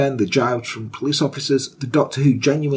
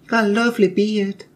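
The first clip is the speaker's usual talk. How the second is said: put-on flirty voice, pitched higher; 8 semitones higher than usual. Imagining a visit where Nanny Doss flirts: flirty Nanny Doss impression. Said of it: "She's flirting with you a bit".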